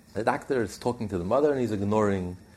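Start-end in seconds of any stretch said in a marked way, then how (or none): none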